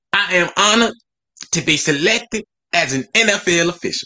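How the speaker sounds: put-on very high, slow, unhurried old auntie voice. Reading an official's statement aloud in a put-on Chaka voice. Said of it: "why Shaka sound like somebody like grandma".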